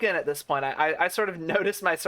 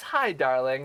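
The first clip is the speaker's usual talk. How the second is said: put-on sweet tone, lower pitch; 4 semitones lower than usual. Retelling how a woman with wasp stings greeted the speaker: imitating a sweet greeting. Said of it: "smiles really sweetly and she goes".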